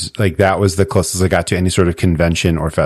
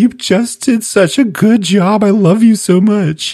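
put-on tearful gushing, very high, drawn out; 4 dB louder than usual. Imitating someone tearing up while praising an actor: imitating Binks tearing up. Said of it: "Binks is gonna be there, like, tearing up".

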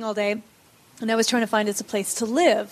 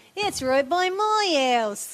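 put-on female Australian accent, higher pitch; 6 semitones higher than usual. Retelling asking a woman for directions, imitating her Australian accent. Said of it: "How was that? Is that better?".

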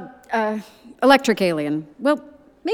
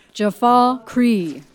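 lower, deeper-pitched voice. Saying a voice passcode again after the computer asks for lower: lower-pitched voice.

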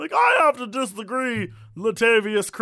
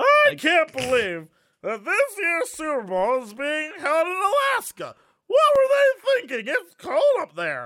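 put-on boozy old man voice, high and swooping, announcer-like; 5 semitones higher than usual. Doing a sportscaster bit about the super bowl in an old drunk man voice. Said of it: "my old drunk man voice".

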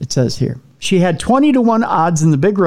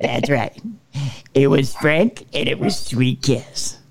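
put-on radio countdown host voice, lower and quieter; 4 semitones lower, 5 dB quieter than usual. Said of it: "I should do this in a Casey Kasem voice".

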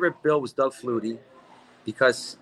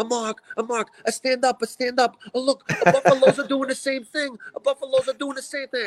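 put-on very high-pitched, shrill Italian accent; 11 semitones higher than usual. Retelling what an elderly father-in-law shouted during a game: imitating an Italian accent. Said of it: "has an Italian accent".

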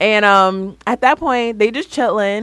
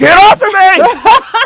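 shrill, very high, very loud, drawn-out furious yell; 11 semitones higher, 8 dB louder than usual. Retelling a scene where Nina turned into an Incredible Hulk: imitating furious yell. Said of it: "Nina turned into an Incredible Hulk".

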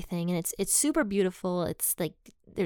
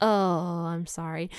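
put-on embarrassed tone, slower. Retelling how a man who had scolded them apologized: imitating an embarrassed apology. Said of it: "you could tell he got kind of embarrassed".

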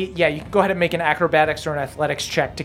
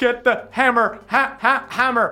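staticky, crackly voice, higher and slower; 6 semitones higher than usual. Narrator voicing a staticky voice that calls out during a fight. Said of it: "You hear the staticky voice just being like".

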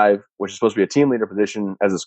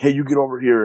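restrained high-pitched yell; 5 semitones higher than usual. Retelling how a squad leader kept calling a friend: imitating someone yelling. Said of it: "kept calling and calling and yelling at my buddy".

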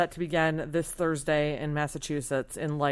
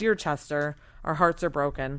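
usual speaking voice

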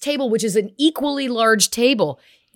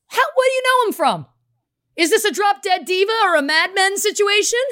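mock teasing holler, playful and high-pitched; 10 semitones higher than usual. Retelling what the speaker yelled over to some kids: retelling a playful yell. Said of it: "I just kind of yell over playfully".

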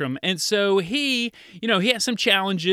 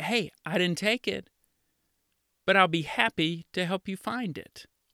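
calm, much quieter tone; 5 dB quieter than usual. Showing a child how to answer a sister's accusation, speaking calmly. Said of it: "you could calmly just say".

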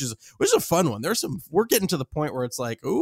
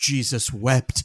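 mock dramatic, exclaiming delivery; 3 semitones lower than usual. Retelling how the co-host reacts to bad audio: imitating a dramatic exclamation. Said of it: "This is a little bit dramatic".

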